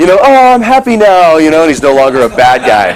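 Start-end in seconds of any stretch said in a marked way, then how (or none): 0.2-1.4 very high, slow, put-on cartoon happy-villain voice. Retelling a cartoon where the bad guy turns happy: imitating a reformed happy villain. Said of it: "he starts turning into this happy guy".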